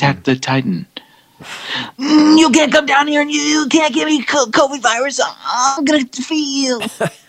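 anime dub voice, pitched very high. Joking about fighting the COVID virus, Attack on Titan anime voice. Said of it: "you could be a voiceover artist".

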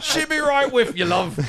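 high mock Australian accent, laughing through it. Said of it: "It makes an Australian sound".

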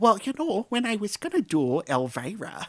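high chatty casual voice. Showing the others how a well-known actress talks: Edie McClurg voice. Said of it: "she just talks like that".

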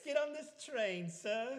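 bad fake German accent, very high-pitched. Retelling being led through tunnels, voicing the people leading them, bootleg German accent. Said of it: "Kind of fucking accent is that?".

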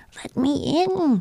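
dry little cry. Narrator reads a tiny figure at the window, Thistle's dry little voice crying. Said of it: "cried the dry little voice".

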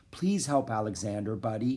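ordinary delivery

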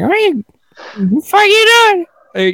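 very high, odd, silly put-on voice. Showing off the kinds of voices they can do: weird silly voice. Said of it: "I can do like weird voices".

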